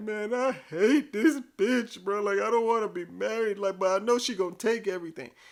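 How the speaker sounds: mock high-pitched hysterical sobbing through words. Retelling what a married friend said while he was crying: imitating hysterical crying. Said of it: "hysterically crying".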